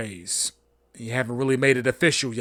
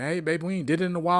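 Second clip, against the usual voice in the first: pushy, badgering, pestering tone; 4 semitones higher, 4 dB quieter than usual. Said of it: "he's badgering".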